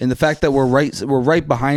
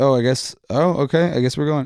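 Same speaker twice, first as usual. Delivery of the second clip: put-on confused-sounding voice. Retelling a rickshaw driver's reaction to a passenger hopping in: imitating a confused driver. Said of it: "confused, obviously".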